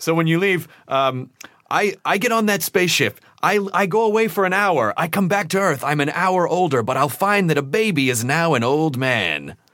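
grand, theatrical announcer delivery. Retelling a magazine advertisement from childhood: imitating a very dramatic ad voice. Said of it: "he had this very dramatic voice".

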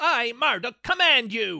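shrill, furious, high-pitched, drawn-out voice. Retelling a villain's angry command: imitating Marduk's shrill voice. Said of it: "his voice is sounding kind of shrill".

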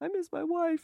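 very high, teary, near-crying whimper. Retelling looking out a train window at night: retelling own tearful words. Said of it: "tearing up and being like".

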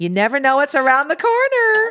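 cheery, upbeat, high and loud. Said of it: "And she says it like that".

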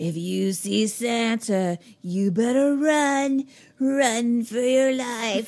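sinister, very loud, almost echoing evil voice. Describing a scene where the grandpa warns his grandson, retelling an evil echoing voice. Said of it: "he also kind of has like an evil, almost echoed voice".

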